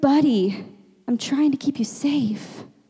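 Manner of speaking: acted weepy, tearful voice, crying through the words. Retelling own words to a hurting child: retelling own crying words. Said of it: "I'm, like, crying".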